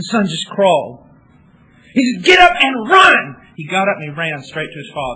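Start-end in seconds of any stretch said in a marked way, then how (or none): 2.2-3.4 shrill, very loud, drawn-out madman scream. Retelling a father calling out to his son: retelling a scream like a madman. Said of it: "he screams like a madman at his son".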